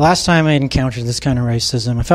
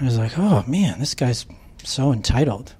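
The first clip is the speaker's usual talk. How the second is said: plain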